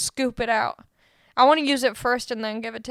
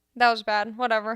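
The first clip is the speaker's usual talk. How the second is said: normal talking voice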